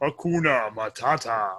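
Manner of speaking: dark, low, slow, drawn-out menacing voice. Showing how a phrase can sound threatening, says it low, slow, menacing. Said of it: "in a low enough voice and slowly enough, it sounds menacing".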